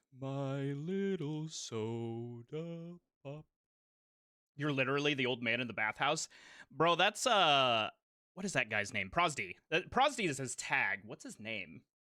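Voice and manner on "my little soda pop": very slow, dragged-out, mocking drawl. Quoting a mocking line from K-pop Demon Hunters: Gwi-Ma voice. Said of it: "I will quote Guima".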